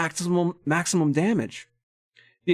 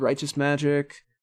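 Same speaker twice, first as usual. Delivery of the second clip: plain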